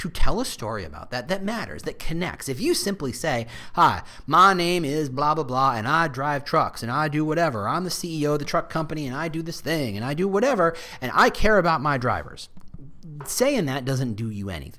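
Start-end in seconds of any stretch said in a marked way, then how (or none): 3.7-12.5 fake Texan accent throughout. Speaker giving an example truck company CEO introduction, put-on Texas accent. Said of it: "apologies for that accent. I went straight to Texas".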